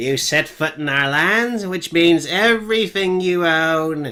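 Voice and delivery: high, loud, nasal goblin voice. A small goblin steps out and speaks, in a nasally goblin voice. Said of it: "nasally voice".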